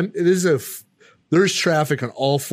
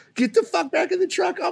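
put-on frantic woman's panicked yelling, higher pitch. Retelling what a passenger yelled at the other driver: imitating a frantic woman yelling. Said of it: "she's losing her fucking mind".

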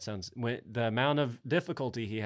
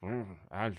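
mealy-mouthed, indistinct mumble. Doing an impression of Jeff Bridges, mealy-mouthed: Jeff Bridges impression. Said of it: "That's a good impression".

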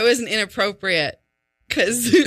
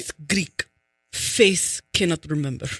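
put-on low, deep Russian accent; 4 semitones lower, 3 dB quieter than usual. Talking with another speaker, suddenly slipping into a Russian accent. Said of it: "you just did a Russian accent".

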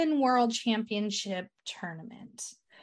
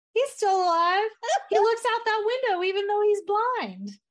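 put-on high, loud, little-girl gushing voice. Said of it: "And she's like".

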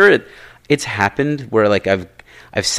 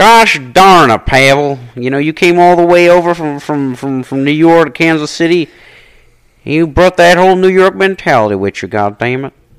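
put-on Southern accent, higher and louder; 7 semitones higher, 7 dB louder than usual. Addressing Pavel, in a Bush-like Southern accent. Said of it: "Kind of sound like Bush/Southern Bush".

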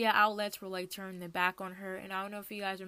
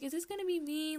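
mock gentle, sweet, high, uneasy little voice; 8 semitones higher than usual. Retelling how a really sweet woman asked before hearing the lyrics, imitating her sweet way of asking. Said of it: "the way she said it".

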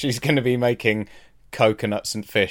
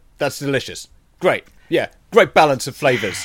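agitated-sounding, warm-worded tone; 2 semitones higher, 4 dB louder than usual. Imitating Gordon praising food: imitating Gordon sounding agitated while happy. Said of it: "he still sounds a bit agitated".

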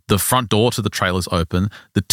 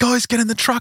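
put-on, high, frantic, freaked-out screaming. Retelling a panicked escape from a truck: imitating someone screaming. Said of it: "and just screaming, yelling".

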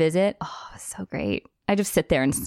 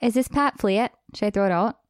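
put-on Minnesota accent; 3 semitones higher than usual. Repeating a roommate's words when asked: imitating a Minnesota accent. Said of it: "say what she said again?".

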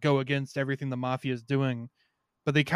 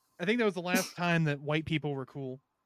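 ordinary talk

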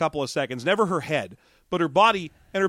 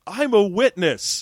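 shoddy, bad fake British accent; 3 semitones higher, 3 dB louder than usual. Acting out a film extra's line from a scene: bad fake British accent. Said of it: "the shitty British accent like we are doing".

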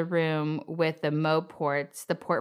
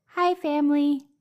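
very high-pitched, little cartoon character voice; 10 semitones higher, 3 dB louder than usual. Giving an impression of a character greeting his family, in a Bemo impression. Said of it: "You want to give me an impression of a character?".

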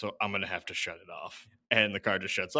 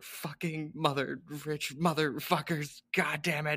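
drawn-out, high-pitched, furious yelling; 8 semitones higher than usual. Retelling how the movie's heroine yells after the car: imitating a character yelling. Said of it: "She just yells".

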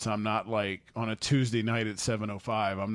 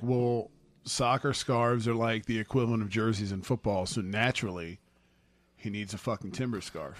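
normal talking voice

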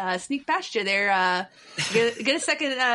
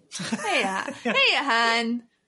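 cartoonish Midwestern accent, waitress character voice. Playing a Midwest coffee shop server offering refills: Midwest coffee shop server voice. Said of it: "the Midwest coffee shop server".

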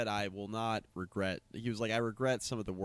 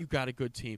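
mock condescending tone, higher pitched; 4 semitones higher than usual. Imitating a coach consoling a losing opponent after games: imitating a condescending coach. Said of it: "real condescending".

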